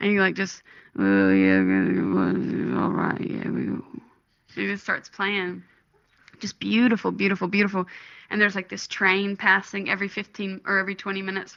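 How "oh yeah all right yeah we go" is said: deep, very low, slow, drawn-out rumbling growl. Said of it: "he's, like, growling".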